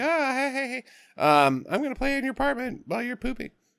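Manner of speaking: put-on very high, soft little-girl voice. Retelling a plot, the speaker does the little girl's line, imitating a little girl. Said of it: "the little girl comes back over, and she's like".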